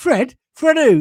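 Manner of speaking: startled, high-pitched, loud disbelief.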